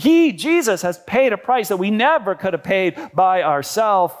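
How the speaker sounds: normal talking voice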